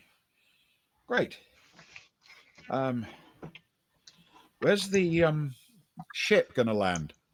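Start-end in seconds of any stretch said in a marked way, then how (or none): 1.1-7.1 high, pitched-up voice as if over the radio. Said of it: "Seal over the radio saying".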